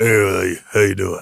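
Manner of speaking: very low, rough voice. Imitating how an actor talks as Gar in the movie Mask: Sam Elliott voice. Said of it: "he's got that, that voice".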